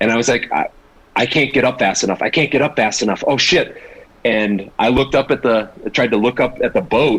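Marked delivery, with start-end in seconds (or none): 0.5-3.8 rising panic, stammering and stumbling over words. Retelling a first scuba dive, far down the anchor line: retelling own panic. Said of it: "I started getting a panic".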